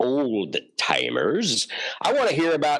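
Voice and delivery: slow, drawn-out voice swooping up and down. Speaker tells the room which people they want to hear from; Santa Claus voice. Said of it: "that was my Santa Claus voice".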